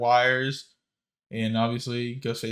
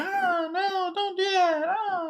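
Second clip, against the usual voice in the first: put-on half-hearted screams, higher pitch. Imitating an actress swinging on a wire: imitating McKenna Grace's half-hearted screaming. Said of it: "it's not even, like, screaming".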